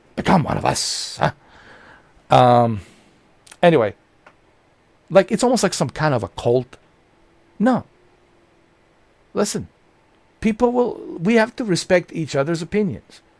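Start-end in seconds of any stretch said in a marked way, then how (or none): 0.2-1.4 creaky, roughened voice. Acting out someone urging another person to join in: Al Pacino voice. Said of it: "I'm starting to sound like Al Pacino there".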